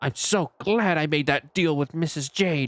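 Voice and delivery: loud, deliberately audible mutter under breath. Voicing a line muttered loud enough to be heard across the room: loud mutter under his breath. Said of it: "Under his breath as loud as he can".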